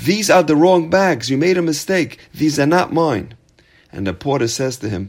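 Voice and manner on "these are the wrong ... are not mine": loud, screamed-out yelling. Retelling a parable where a businessman spots the porter coming: imitating someone screaming. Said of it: "he screams out".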